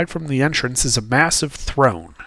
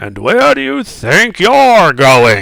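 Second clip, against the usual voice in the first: booming, loud giant voice; 4 semitones higher, 5 dB louder than usual. Game narrator voices a giant calling after a player turning away: booming giant voice. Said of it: "he booms out".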